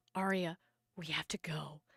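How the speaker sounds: very low, hushed, scared whisper. Retelling how your mother leaned down to your ear and spoke very quietly. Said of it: "very quietly says in my ear".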